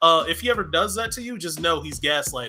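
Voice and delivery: normal talking voice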